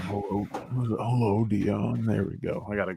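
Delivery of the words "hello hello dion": eerie, unsettling, creepy put-on voice. Trying out a voice meant to mess with dion: creepy voice. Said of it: "I don't do that voice".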